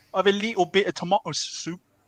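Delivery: bad put-on Cockney accent. Showing how you drop the L in little, in a terrible Cockney accent. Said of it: "you drop the L".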